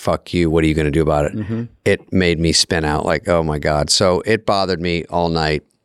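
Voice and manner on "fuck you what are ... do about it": mock near-laugh, much faster. Recalling a man who hit someone and walked away, imitating someone almost laughing. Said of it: "and almost like laughing".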